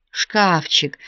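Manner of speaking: moaned, groaning cry. The father reacts to the robbery at his shop, moaning. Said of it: "простонал отец".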